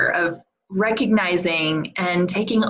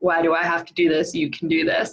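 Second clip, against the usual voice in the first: acted grumpy, mock-irritated tone; 2 semitones lower than usual. Parent retelling getting grumpy with their five-year-old, acting out being grumpy. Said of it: "I got grumpy with him the day before".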